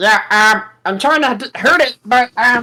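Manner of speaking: high character voice.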